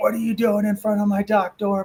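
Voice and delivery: mock confrontational, high-pitched, demanding yell. Retelling a guy pulling up at his dock door: imitating someone yelling. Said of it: "starts yelling at us".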